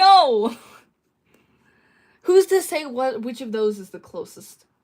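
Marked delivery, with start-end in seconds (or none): 0.0-2.6 loud, yelled-out protesting voice. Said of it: "I'm yelling".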